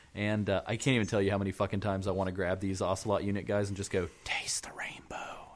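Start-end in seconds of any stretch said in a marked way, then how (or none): 4.2-5.6 soft, unvoiced whisper. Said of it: "whisper things in their headsets".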